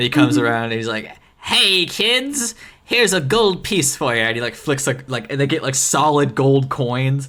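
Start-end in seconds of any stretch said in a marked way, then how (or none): 1.4-4.2 put-on squeaky, very high, slow, slightly drunk little-man voice. Imagining a little guy who comes down the chimney for the kids: slightly drunk little guy voice. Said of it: "a slightly drunk little guy with a red beard".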